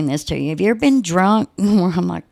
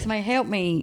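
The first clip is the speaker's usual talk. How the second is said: play-acted, restrained, held-back cry; 2 semitones higher, 7 dB quieter than usual. Retelling screaming for help with a sick child in arms: retelling a scream for help. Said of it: "I'm screaming with my kid in my arms".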